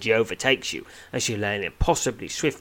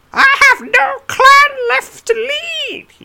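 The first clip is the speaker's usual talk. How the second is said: put-on very high, very loud snarl of an elderly goblin; 8 dB louder than usual. Narrating an adventure, voicing the elderly goblin who confronts you, snarling. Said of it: "he snarls".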